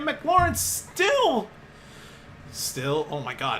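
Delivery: voice cracking and breaking mid-phrase. Calling a Commanders play, McLaurin making a catch, voice cracking. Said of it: "why does my voice keep cracking?".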